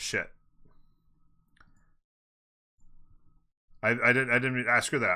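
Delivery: frazzled, flustered, panicked, stumbling over words. Rushing to redo a voting timer that ran short: panicking. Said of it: "I'm panicking".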